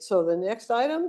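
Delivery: pitch lilting upward at the end of "item". Meeting advice, showing the Pacific Northwest habit: rise at the end on item. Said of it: "you tend to go up at the end".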